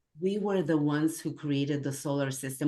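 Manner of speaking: usual speaking voice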